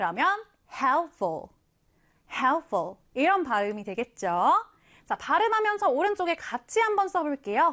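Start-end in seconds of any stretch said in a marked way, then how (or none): 0.7-3.0 helpful with HELP stressed, ful light. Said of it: "앞에 강세를 강하게 두고 뒤엔 약하게".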